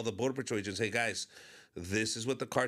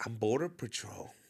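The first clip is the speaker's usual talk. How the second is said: mock whispering. Retelling what a woman on the dance floor said: imitating someone whispering. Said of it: "she's, like, whispering".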